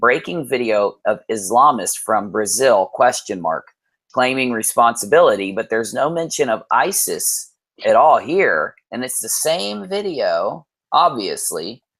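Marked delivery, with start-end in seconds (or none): none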